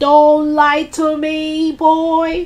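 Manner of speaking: very slow, high, drawn-out shout, each word dragged. The grandmother shouts at her grandson George. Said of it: "The enormous old hag shouted".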